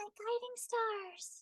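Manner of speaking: very high, soft, airy, youthful-sounding voice. Demonstrating a character's voice while describing it, airy, high-pitched youthful voice. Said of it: "a lot of air, high pitched".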